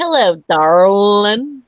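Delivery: loud, bad fake southern drawl. Speaker mocking people who can't do the accent, bad fake southern accent. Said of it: "try to say it with a southern accent".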